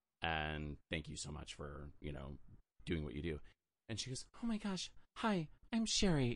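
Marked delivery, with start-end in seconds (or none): 4.4-6.4 put-on ditzy, airheaded woman's voice. Retelling how a woman introduced herself, in a ditzy Sherry impression. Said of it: "with the blonde ditzy voice".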